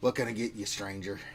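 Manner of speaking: gruff bartender voice. Voicing a barkeep greeting a newcomer: gruff barkeep voice. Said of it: "looks at you with a gruff kind of".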